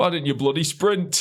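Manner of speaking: put-on very high-pitched, full Yorkshire accent. Retelling the race, the speaker quotes Keith at the end, imitating Keith's Yorkshire accent. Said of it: "he's proper Yorkshire".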